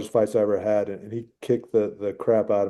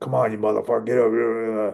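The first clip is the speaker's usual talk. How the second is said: harsh, negative, berating angry dad voice, overly drawn out. Describing the opposite voice in your head during a fight, a dad voice. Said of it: "like that dad voice".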